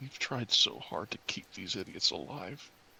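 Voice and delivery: hushed, quiet, whispered aside. Speaking in character, whispering to Vala about keeping the others alive: whispering. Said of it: "I whispered to Vala".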